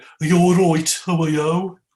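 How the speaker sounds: loud, full Birmingham Brummie accent. Comparing British regional accents, the speaker mimics how Birmingham people talk: imitating a Birmingham accent. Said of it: "And Birmingham".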